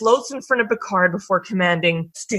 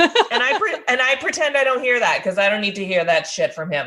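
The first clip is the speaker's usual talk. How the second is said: normal talking voice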